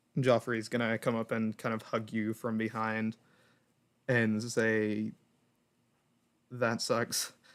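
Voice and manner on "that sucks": mellow, understated, low-key delivery. Describing a scene where Joffrey hugs someone from behind, in a very quiet tone. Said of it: "in a very quiet tone".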